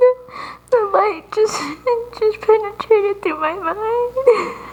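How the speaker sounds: laughing or crying while talking. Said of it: "I can't tell if you're crying or laughing".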